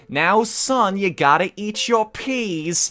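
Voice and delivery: sassy New York voice. A speaker remarking on a tone in their own voice, doing a sassy new york mom tone. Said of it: "New York mom tone in my voice".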